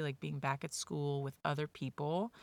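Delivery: ordinary talk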